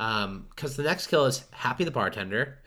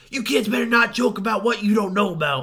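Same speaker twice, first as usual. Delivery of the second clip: shrill scolding yell, very high, loud; 9 semitones higher, 8 dB louder than usual. Speaker retelling a movie scene; Happy the Bartender yelling. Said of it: "And he's like yelling at them".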